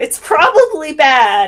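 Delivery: loud high-pitched shout.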